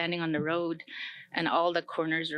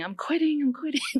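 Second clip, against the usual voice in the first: very high, tearful yell, crying out; 10 semitones higher, 4 dB louder than usual. Speaker recalls carrying a vessel up a steep hill, retelling own yelling. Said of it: "I kept yelling".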